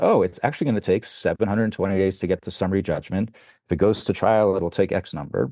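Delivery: ordinary talk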